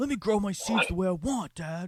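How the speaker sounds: acted, snappy, angsty, high, loud teenage yell. Describing someone teenaged out and angsty who snaps, imitating an angsty teen yelling. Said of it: "He snaps and yells".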